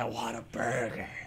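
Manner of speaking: mock menacing voice, low and soft.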